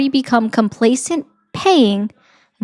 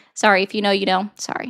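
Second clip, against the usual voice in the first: ordinary delivery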